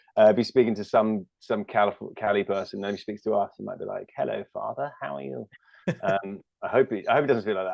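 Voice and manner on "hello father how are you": put-on soft, creaky, haunting horror-movie creepy-child voice. Imagining how he might greet his father, in a creepy British movie-kid voice. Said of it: "he sounds like a creepy kid who'd haunt you in a movie".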